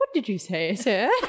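voice of an Edwardian lady. Answering a young man who just spoke to the speaker, weird Edwardian woman voice. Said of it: "Like a weird Edwardian woman".

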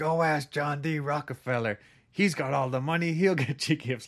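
grouchy puppet voice, half called out, shouting. Retelling what Santa shouted at kids on Main Street, in an Oscar the Grouch voice. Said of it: "an Oscar the Grouch style voice".

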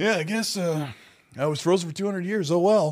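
acted, deadpan, flat, unbothered, indifferent delivery. Imitating a Fallout 4 voice actor's delivery: imitating a flat, indifferent delivery. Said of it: "his delivery is kinda like".

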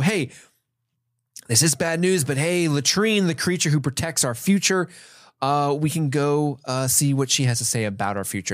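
plain

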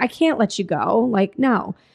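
mock distraught trembling voice. Retelling a story, the speaker voices a woman pleading with him, imitating a distraught, shaking voice. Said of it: "very distraught and very sad and her voice is shaking".

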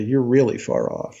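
ordinary talk, nothing marked

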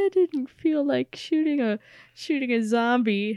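mock, high, tearful, choked-up crying voice. Retelling a scene where Carl runs over to Rick: imitating Carl crying. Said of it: "and he's, like, crying".

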